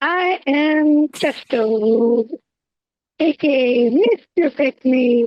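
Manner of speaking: strange altered voice, very high and drawn out. Introducing themself on the podcast, weird altered voice. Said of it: "Why is your voice so weird?".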